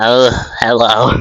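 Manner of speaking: put-on girl character voice. Showing the voice chosen for the girl character in the retelling: put-on voice for her character. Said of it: "I don't know why I made her sound like that, like this".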